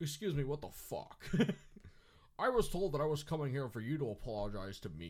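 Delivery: put-on loud, high Scottish accent. Retelling a man's reaction when asked to apologize, sounding like Sean Connery. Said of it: "you sound like Sean Connery".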